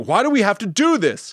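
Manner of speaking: distraught, upset, high-pitched scream. Retelling a friend screaming about a sad movie: imitating Kristen screaming. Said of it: "Kristen is screaming about how sad this is".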